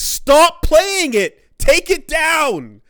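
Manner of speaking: mock screaming. Retelling a game developer's chat messages: imitating a screaming developer. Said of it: "jumped in the chat and started screaming".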